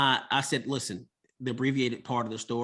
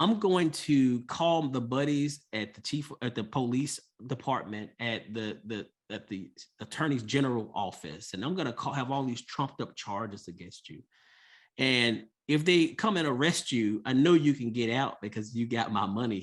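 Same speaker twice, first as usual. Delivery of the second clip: usual speaking voice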